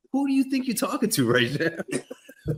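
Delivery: high, sincerely curious, genuinely interested tone. Retelling what a mom says when her child talks back: imitating his mom. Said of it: "she'll look at you like".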